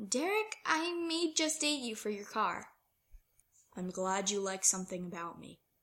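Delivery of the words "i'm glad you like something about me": flat, expressionless, deadpan delivery. Derek replies to Styles joking about dating him for his car, deadpan. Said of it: "Derek deadpanned".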